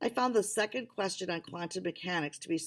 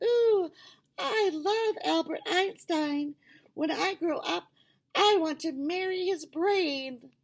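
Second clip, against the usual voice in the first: very high, loud, mocking voice; 11 semitones higher, 6 dB louder than usual. Reading a story: a boy entertains the others by playing Max, in a high-pitched Max impression. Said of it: "He put on a high-pitched voice".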